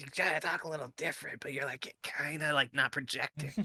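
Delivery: loud whisper, not projected. Explaining to friends what whispering loudly means, in a loud whisper. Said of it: "when you kind of talk like this".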